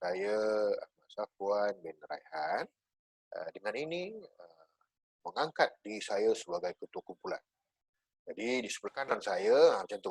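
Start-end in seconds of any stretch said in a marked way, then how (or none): 0.0-2.6 slow, deliberate, carefully paced, unhurried delivery. Showing how to introduce yourself as group leader, spoken slow. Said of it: "kena cakap slow".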